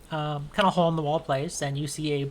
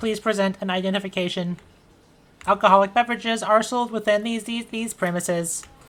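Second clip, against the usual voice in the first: loud, mechanical, machine-like robot voice; 4 semitones higher, 6 dB louder than usual. Voicing a robot that greets arriving players: robot voice. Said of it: "This robot looks at you and says".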